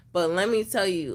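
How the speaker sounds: ordinary delivery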